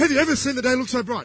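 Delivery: high, fast, gushing, cheery, bubbly voice. Retelling how a girl from church used to greet the speaker, imitating a bubbly greeting.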